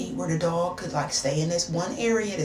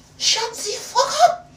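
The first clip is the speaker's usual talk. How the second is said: put-on French accent, pitched very high; 6 dB louder than usual. Retelling snapping at a partner during an argument: imitating own French accent. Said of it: "I turned into a whole French woman".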